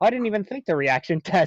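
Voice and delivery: plain, honest, guileless, utterly sincere voice. Retelling another player's reply to an accusation: imitating a sincere honest voice. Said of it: "honest voice I've ever heard".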